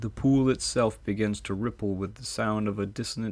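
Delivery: plain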